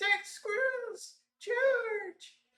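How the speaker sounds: very high, tiny little squeaking voice. During a tabletop roleplaying game, a voice calls out to the players: tiny voice. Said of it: "in a tiny, tiny voice".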